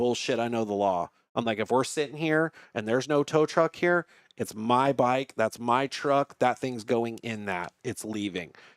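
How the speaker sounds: usual speaking voice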